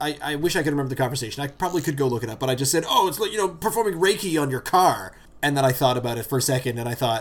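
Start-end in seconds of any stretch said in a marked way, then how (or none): 2.9-5.1 scoffing, sarcastic throwaway tone. Quoting their own earlier comment in a conversation, retelling a sarcastic remark. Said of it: "I sarcastically said".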